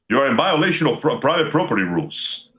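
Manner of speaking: artificial, synthetic robot-like machine voice. Imagining a home robot challenging someone at three in the morning: synthetic voice. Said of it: "you hear the synthetic voice going".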